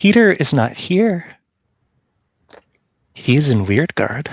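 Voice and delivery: put-on whisper. In the game, the magic answers through Fifi; Fifi's whisper. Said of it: "Fifi's voice whispers out".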